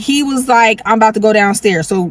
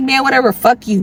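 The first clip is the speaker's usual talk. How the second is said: mock fed-up, angry, dismissive tone; 3 semitones higher than usual. Retelling calling him after he left without telling her: retelling own angry words. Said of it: "So I'm hella mad".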